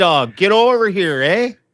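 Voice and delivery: put-on Canadian accent. Podcast host calling a dog over in a put-on Canadian accent. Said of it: "making Canadian noises".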